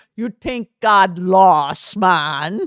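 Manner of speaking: put-on accent from the Bahamas. Retelling what a woman told them, a speaker attempts a Bahamian accent. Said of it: "I wish I could do the Bahamian accent".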